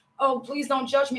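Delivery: normal talking voice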